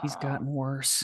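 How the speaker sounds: grumpy grumbling mutter under the breath. Reacting in character to a character's noisy arrival: grumbling to myself. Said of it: "I grumble to myself".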